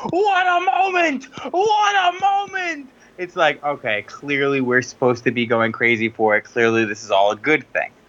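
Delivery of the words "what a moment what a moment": play-acted very high, shrill, stretched-out excited scream. Retelling watching the segment unfold: imitating Michael Cole screaming. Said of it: "just screaming".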